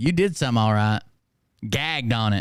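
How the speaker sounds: usual speaking voice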